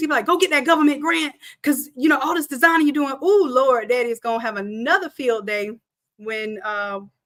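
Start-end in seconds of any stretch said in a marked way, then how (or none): 0.3-3.1 insistent, pushy dad voice pushing hard. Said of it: "why my daddy used to yell".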